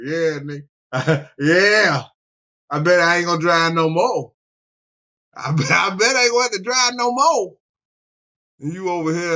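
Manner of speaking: acted, loud words laughed out. Retelling what she said while looking at the speaker, imitating someone laughing while talking. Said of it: "she was looking at me laughing like".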